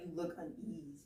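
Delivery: ordinary talk, nothing marked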